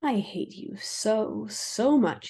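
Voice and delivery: hissed under the breath, very slow. A man speaking so only the two people beside him hear, a low hiss. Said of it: "he hissed, keeping his voice low".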